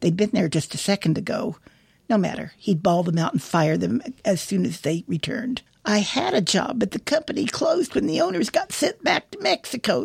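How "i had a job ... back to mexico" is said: very high, nagging, whiny complaining tone. An old woman, told to get off a man's property, answers him whining. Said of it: "the old gal whined".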